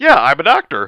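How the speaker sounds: loud, high-pitched announcer voice. Acting out how a friend tries out for an acting job: imitating Raptor. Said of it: "That's how Raptor tries out for an acting job".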